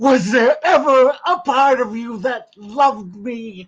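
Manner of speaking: slow, high, full-voiced. Showing others an impression of Drew Barrymore when asked: Drew Barrymore impression. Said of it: "my impression of Drew Barrymore".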